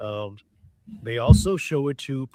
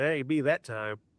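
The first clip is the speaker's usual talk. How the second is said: ordinary talk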